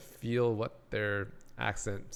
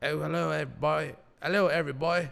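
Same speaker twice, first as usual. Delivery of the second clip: put-on Cockney British accent, high and loud; 6 semitones higher, 6 dB louder than usual. Trying out a fun accent for listeners, put-on Cockney accent. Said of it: "do I sound like a Cockney?".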